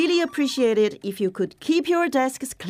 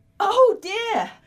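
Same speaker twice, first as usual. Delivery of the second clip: high, startled, shocked cry of dismay; 9 semitones higher than usual. Sitting down at a shared hot desk, the speaker reacts, sounding shocked. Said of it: "You sound shocked".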